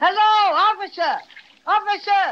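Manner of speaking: booming, big, high-pitched yell. Taking over calling a policeman who didn't hear the first shout: yelling. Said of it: "Let me do the yelling".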